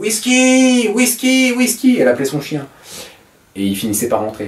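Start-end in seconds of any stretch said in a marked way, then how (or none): 0.0-2.0 very high, yelled hollering. Retelling how a village nanny yelled for her dog at night: imitating Mémé yelling. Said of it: "elle hurlait".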